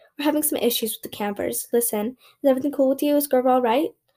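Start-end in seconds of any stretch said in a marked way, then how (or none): none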